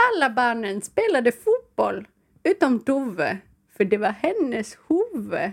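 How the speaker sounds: Swedish-speaking Finnish accent. Read the first one aloud to the others in a put-on Finland-Swedish accent. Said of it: "läsa den första på finlandssvenska".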